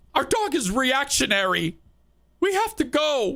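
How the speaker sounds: very high, tearful, weepy crying voice. Retelling what a dog owner's daughter said: imitating a crying voice. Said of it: "she said it like, you know, when Kenny's crying".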